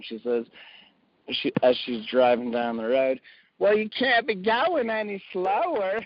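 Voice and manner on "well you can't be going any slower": put-on Texas accent, pitched up. Quoting the speaker's wife while she drives, imitating a Texas accent. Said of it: "she has a Texas accent".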